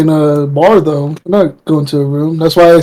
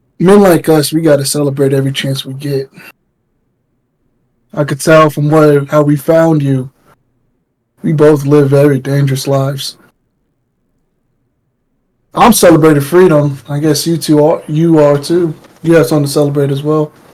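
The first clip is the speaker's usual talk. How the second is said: put-on slightly drunken-sounding, a bit tipsy. Speaking in character with a hand on another's shoulder, urging a drink: slightly drunken. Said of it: "little drunkenly".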